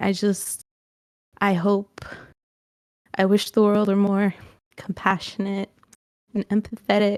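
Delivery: speaking while crying, tearful. Unsure why, the speaker keeps talking while crying. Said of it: "I'm crying".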